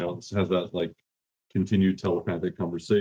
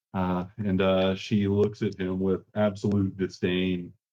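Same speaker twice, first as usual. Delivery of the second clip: plain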